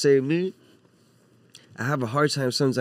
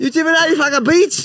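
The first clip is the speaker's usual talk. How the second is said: very high-pitched mock Chinese accent.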